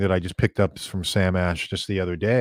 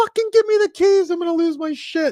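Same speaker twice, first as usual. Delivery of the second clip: put-on very high, shrill shriek. Retelling demanding bathroom keys from grocers: imitating someone screaming. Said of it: "I did start screaming".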